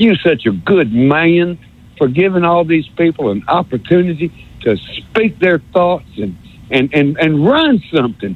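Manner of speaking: put-on North Alabama accent throughout. Speaking to Paul, doing the North Alabama accent again. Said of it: "I love this North Alabama accent thing. I'm going to do it again".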